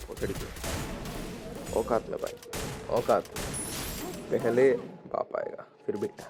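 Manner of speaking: slow, whispered taunt. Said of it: "मैंने उसे बोला कि".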